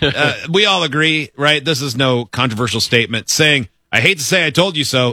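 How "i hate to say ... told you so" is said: plain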